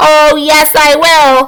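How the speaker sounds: tiny squeaky voice, very slow and drawn out. Reading a story aloud, Mike Teavee answers, tiny squeaky Mike Teavee voice. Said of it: "squeaked the tiny voice of Mike T V".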